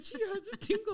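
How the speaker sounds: mock, high, talking through helpless laughter. Retelling how a coworker reacted to a woman's intake form, imitating someone laughing uncontrollably. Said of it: "she could not stop laughing".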